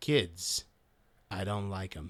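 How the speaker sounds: sinister put-on voice. Doing a monologue from the episode: Principal Snyder impression. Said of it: "if I'm gonna do impressions".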